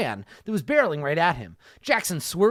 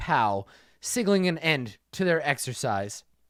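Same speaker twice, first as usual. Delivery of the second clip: ordinary talk, nothing marked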